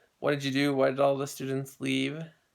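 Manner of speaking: ordinary talk, nothing marked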